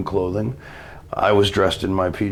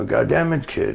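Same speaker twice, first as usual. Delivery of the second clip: horrible put-on French Canadian accent, pitched up; 8 semitones higher than usual. Retelling what Pat Patterson said to you after the match, bad French Canadian accent. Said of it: "I do a horrible French Canadian accent".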